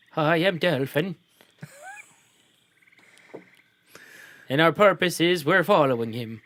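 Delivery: put-on Irish accent, sing-song. Answering a woman who asks who they are and why they're with her son; attempted irish accent. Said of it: "Dolphin's trying to do Irish".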